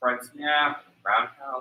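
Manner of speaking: soft, low, timid, mumbled voice.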